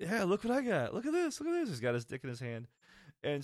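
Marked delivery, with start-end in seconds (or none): 0.2-1.7 very high, proud, show-off voice. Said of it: "real happy".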